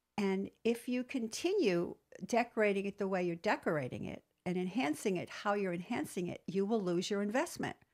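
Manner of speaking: ordinary talk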